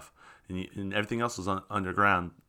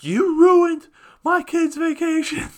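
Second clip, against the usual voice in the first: put-on shrill, very high, drunken screaming; 8 dB louder than usual. Retelling a drunk caller's voicemail to the bank, imitating a drunk man screaming. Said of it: "was just screaming at us".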